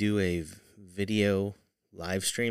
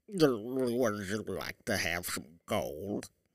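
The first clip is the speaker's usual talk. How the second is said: beastly goat-monster creature voice, "you" stretched out; 6 dB quieter than usual. Wondering what Krampus sounded like, the speaker tries out a Krampus voice. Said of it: "This is the voice of the Krampus".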